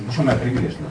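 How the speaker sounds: ordinary delivery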